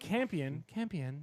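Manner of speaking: put-on robotic voice. Retelling how an android character says a kid's name: imitating an "I'm a robot" voice. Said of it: ""I'm a robot" voice".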